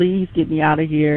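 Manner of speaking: ordinary talk, nothing marked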